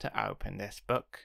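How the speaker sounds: ordinary delivery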